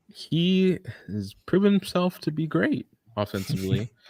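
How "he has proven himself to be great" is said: voice breaking mid-phrase, cracking and pitched up. Talking through a baseball player's stats, voice cracking. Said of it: "sorry for that voice crack".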